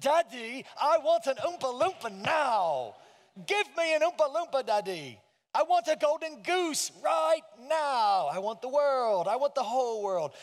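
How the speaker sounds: pushy, insistent voice. Quoting a favorite scene from the original Willy Wonka: imitating Veruca Salt. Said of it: "one of my favorite scenes is Veruca Salt".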